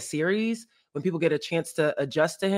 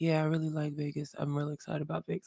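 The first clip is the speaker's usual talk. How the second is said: soft, dead flat monotone drone with no lift; 8 dB quieter than usual. Retelling an interview answer about Vegas, doing a quiet monotone Brandon Ingram impression. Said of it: "I knew he was quiet and I knew he was monotone".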